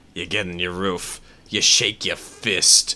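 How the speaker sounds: put-on New Yorker accent. The speaker, from Oklahoma, puts on a stereotypical New Yorker accent. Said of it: "The stereotypical New Yorker accent".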